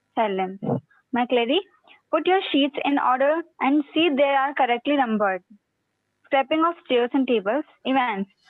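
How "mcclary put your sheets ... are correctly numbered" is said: ordinary delivery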